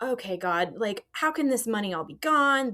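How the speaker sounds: tearful, crying voice. Recounting a phone call about a lost tax return, retelling tearful words. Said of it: "And I'm just crying, going".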